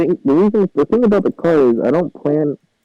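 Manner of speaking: muffled voice, smothered as if underwater. Speaking from under a blanket, muffled voice. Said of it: "You're getting very muffled there".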